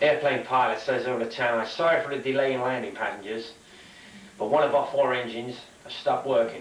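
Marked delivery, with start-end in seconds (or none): none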